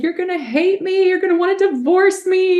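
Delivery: high, loud, panicked, sobbing wail.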